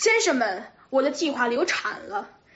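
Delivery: plain reading voice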